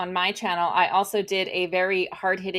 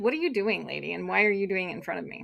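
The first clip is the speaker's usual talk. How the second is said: mock haughty condescending alpaca voice, quieter; 6 dB quieter than usual. Voicing an alpaca that gave Lynn the stink eye: imitating a haughty alpaca. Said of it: "He was a haughty alpa-, alpaca, like, a little condescending".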